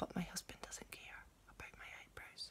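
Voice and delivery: quiet whispering. Chatting casually to viewers about your day, whispering. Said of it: "Why am I whispering?".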